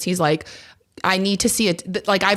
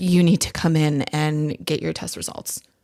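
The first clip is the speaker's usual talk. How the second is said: mock anxious, nervous voice; 4 semitones lower than usual. Retelling a clinic call where the caller sounded nervous: imitating a nervous voice. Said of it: "she sounded so nervous".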